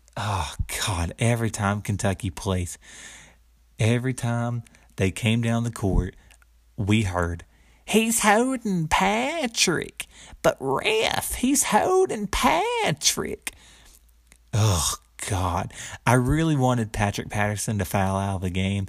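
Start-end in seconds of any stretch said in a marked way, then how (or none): 7.9-13.6 put-on very high, drawn-out, swooping old woman's yell. Recalling an old woman in Tampa at Kentucky games, doing that old woman's voice. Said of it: "I still remember that old woman's voice".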